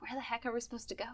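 hushed, very quiet half-whisper. In a role-play scene, the player's character half-whispers to a fellow character: half-whispered. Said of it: "I whisper to Dwayne".

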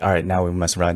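ordinary talk, nothing marked

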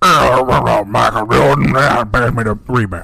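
very loud, slow, booming call. Showing how a basketball player talks: Dennis Rodman impression. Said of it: "Dennis Rodman is kinda like".

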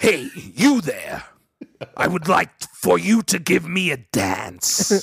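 anime prince character voice. A speaker imagines Vegeta talking to a stripper: Vegeta impression. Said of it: "what does it sound like when Vegeta is talking".

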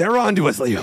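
put-on dead serious, grave tone. Retelling a film scene in goggles: imitating a dead serious tone. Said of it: "he's being dead serious".

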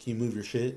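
half-whispered mutter beneath the breath. Retelling a coworker's complaint about pallets in the way: imitating someone half-whispering under breath. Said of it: "whispers underneath his breath".

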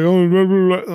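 put-on mumbling as if mouth full. Mocking a show character who says his lines with food in mouth: imitating Greg talking with mouth full. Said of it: "he fucking has a mouthful of food".

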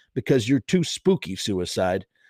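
ordinary talk

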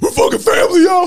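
put-on high, loud drunk-sounding yell.

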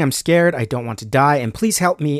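ordinary talk

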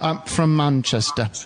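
near perfect put-on English accent, voice shifted.

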